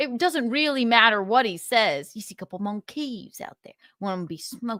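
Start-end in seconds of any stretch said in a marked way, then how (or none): 2.1-4.8 put-on Creole-tinged Louisiana Southern accent. Repeating the other speaker's lines: imitating a Louisiana Southern accent. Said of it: "is this a Southern accent?".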